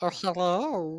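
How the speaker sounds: put-on gnome character accent, female. Voicing a gnome woman greeting a flirting player: put-on gnome woman accent. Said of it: "I like your accent".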